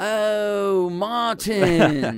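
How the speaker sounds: put-on high, loud British accent. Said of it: "when you have a British accent".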